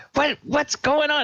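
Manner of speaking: very high-pitched alarmed, startled squeal. Voicing a character who thinks he is attacked and swats around: startled yelp. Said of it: "he yelps out".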